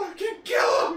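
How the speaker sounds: acted, very high, loud, scared screaming. Retelling how a scared general ordered his men: imitating Kubar's fearful yell. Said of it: "you felt fear in his voice".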